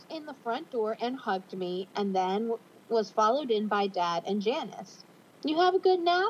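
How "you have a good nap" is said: playful, light teasing, pitched up. Janice speaks to the narrator as she ruffles their hair: teasing. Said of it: "Janice said teasingly".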